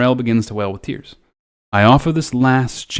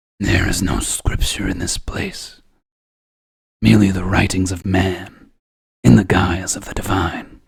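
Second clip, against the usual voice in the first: low, rumbling, growly wolfish voice; 5 semitones lower than usual. Reading a character's line aloud again, this time in a growly voice. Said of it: "he would have like a growly voice".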